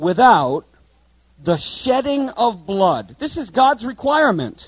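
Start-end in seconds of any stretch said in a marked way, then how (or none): 0.0-3.2 very slow, deliberate, word-by-word delivery. Speaking to friends about what the Bible says, saying it slow. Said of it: "let me say it slow".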